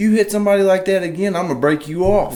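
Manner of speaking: shrill, very high, raging scream. Retelling the promoter's threat after a hit in the race: imitating someone screaming. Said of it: "Promoter comes out screaming at me".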